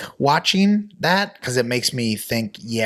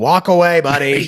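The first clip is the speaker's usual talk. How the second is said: mock yelling, higher and louder; 4 semitones higher, 7 dB louder than usual. Retelling watching a movie, imitating yelling at the tv. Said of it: "yelling at the T V".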